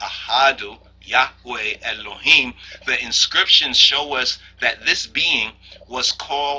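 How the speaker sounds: plain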